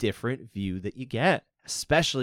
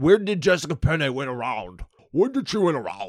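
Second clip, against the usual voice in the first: raised, high, mumbly marble-mouthed voice; 5 semitones higher, 5 dB louder than usual. Mimicking social media backlash over a close round, marble-mouthed voice. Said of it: "weird marble mouth person".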